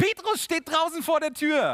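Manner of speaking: overjoyed, high, loud cry of joy.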